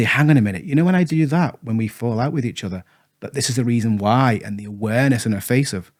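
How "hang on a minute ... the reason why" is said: plain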